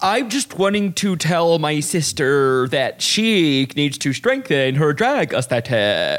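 flat, lifeless, corpse-like voice with no energy. Talking about a contestant, the speaker does a Plain Jane impression. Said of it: "that's a good impression".

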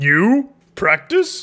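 puppet-like character voice. Asked if someone may join target practice, a crew member replies, Yoda voice. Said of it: "You sound like a Muppet".

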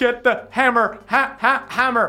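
static-filled voice. In a game fight scene, a voice calls out to the group: staticky voice. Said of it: "You hear the staticky voice just being like".

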